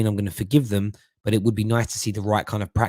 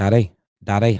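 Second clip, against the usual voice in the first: louder, imitated Northern Irish accent; 4 dB louder than usual. Quoting the speaker's son calling for him, imitating Archie's Northern Irish accent. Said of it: "I did then".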